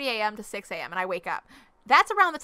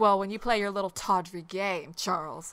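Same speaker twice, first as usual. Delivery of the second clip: octave-down, deep, dropped, mock-mad, angry scolding voice; 2 semitones lower, 4 dB quieter than usual. Replaying what she says when mad at Charles: voice dropped low, mock-mad. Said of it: "my voice goes down an octave when I'm mad, so I'm just like".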